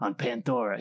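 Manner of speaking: put-on voiceover in Queens accent. Mocking a film's voiceover narration: Jake Sully voiceover with Queens accent. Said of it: "he would say things like".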